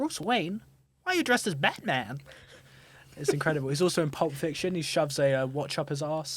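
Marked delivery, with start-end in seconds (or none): 0.0-2.2 pitched-up, swooping, sing-song celebrity-style voice. Quoting a favourite movie line after an impression: Christopher Walken impression. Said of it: "he goes".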